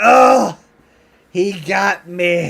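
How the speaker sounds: dramatic, very loud, very slow dying cry. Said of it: "I'll cry out".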